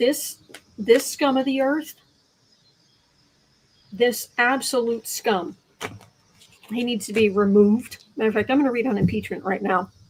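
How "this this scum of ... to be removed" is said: speaking around a mint in mouth, much slower. After apologizing to the other speaker, the speaker keeps talking with a mint in mouth. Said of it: "I'm talking with a mint in my mouth".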